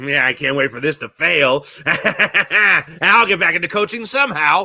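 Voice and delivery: slow put-on voice drawing each word out. Imagining a coach waiting in the wings: Doc Rivers impression. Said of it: "That was me doing an impression".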